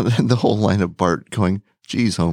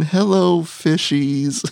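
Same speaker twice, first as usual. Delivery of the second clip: put-on drunk voice, higher pitch; 8 semitones higher than usual. Describing a cartoon scene with a face smushed on glass: drunk Barney voice. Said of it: "Just totally drunk".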